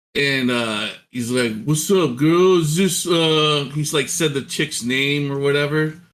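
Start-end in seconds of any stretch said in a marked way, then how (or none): 1.6-3.0 put-on thick, heavy Detroit accent. Retelling what a caller from Detroit said on the phone, imitating a thick Detroit accent. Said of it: "His accent was so thick".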